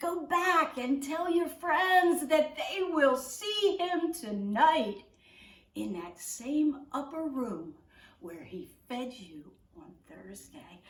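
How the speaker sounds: ordinary talk, nothing marked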